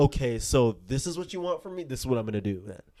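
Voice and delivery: ordinary talk, nothing marked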